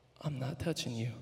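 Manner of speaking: small, quiet, soft little voice. Retelling a fall, quoting the mom speaking from her chair: imitating a quiet voice. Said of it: "I just hear this quiet voice".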